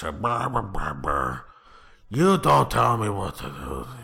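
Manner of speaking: put-on loud defiant old man voice. Demonstrating the different character voices they can do: old man voice. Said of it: "There's like sort of an old man voice".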